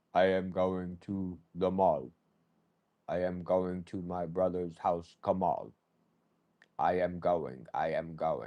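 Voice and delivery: very low, flat, machine-like robotic monotone. Speaker imagining people talking mind to mind through a chip: flat robotic monotone. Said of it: "it's so like monotone".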